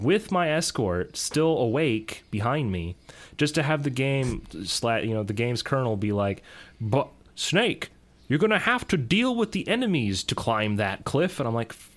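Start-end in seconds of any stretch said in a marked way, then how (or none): 6.8-11.4 posh British officer voice, pitched up. Acting out the game telling Snake to deal with the enemies, do a Major Zero impersonation. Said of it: "That was an amazing impersonation of Major Zero".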